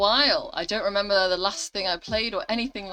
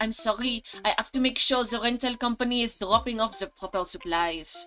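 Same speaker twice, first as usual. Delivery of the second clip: bad, rough, put-on French accent, laid on; 2 semitones higher than usual. Voicing a character who turns down a request for help, Bridget, bad French accent. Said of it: "my French accent is brutal".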